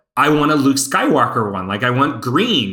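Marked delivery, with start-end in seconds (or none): none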